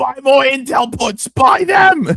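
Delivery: loud, shrill, high-pitched, very slow drawn-out yell. Imagining how someone trades, yelling at an assistant: imitating Trump yelling orders. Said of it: "He's just yelling at her".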